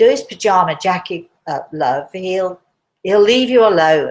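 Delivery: mocking, sarcastic delivery. Retelling what a nurse behind the speaker said, imitating her sarcastic voice. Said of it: "She said in this sort of sarcastic voice".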